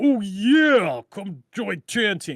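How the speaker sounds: slow promo voice, "yeah" stretched out. Imagining a pitch line delivered like Hulk Hogan: Hulk Hogan voice. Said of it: "that's my Hulk Hogan".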